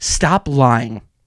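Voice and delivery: irritated, fed-up, angry retorting tone. Ranting that fans pretend a new character is their favorite: angry. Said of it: "I'm angry today".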